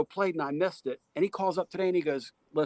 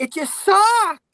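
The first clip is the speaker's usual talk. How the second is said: put-on squeaky, very high, very loud kid voice; 11 dB louder than usual. Retelling what a kid said to him: imitating a kid's really high voice. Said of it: "he had that really high voice".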